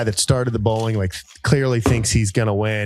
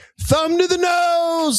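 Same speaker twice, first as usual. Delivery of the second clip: shrill, very high yell, nasal and drawn out. Retelling bowlers shouting at each other: imitating people yelling. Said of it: "yelling all the things".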